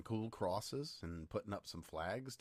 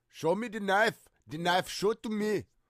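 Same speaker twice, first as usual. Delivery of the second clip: shrill, very high, loud shouted put-on Japanese accent; 12 semitones higher, 13 dB louder than usual. Speaker describing a man in a picture, quoting him in an attempted Japanese accent. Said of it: "in a Japanese accent".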